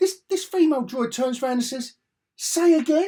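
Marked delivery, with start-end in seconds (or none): 2.4-3.1 put-on teen girl voice, much higher, louder. Retelling a female droid's line from a Star Wars show, in a teenage girl voice. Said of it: "With the voice of a 14-year-old teenage girl".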